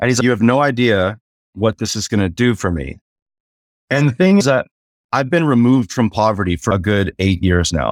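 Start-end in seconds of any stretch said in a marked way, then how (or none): 0.2-3.0 imitated weeping, tearful delivery. Retelling what a man said while weeping over a tip: imitating someone weeping.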